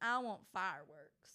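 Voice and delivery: put-on Texas country accent. Repeating to a podcast co-host what a woman said, in a Texas country accent. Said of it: "She said it in that accent".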